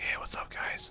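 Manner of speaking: very quiet, breathy ASMR-style whisper. Recalling streaming at night while living with parents; ASMR-style whisper. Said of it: "I had to whisper like A S M R".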